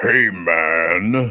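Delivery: imitated deep radio voice. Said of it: "they got really deep voices".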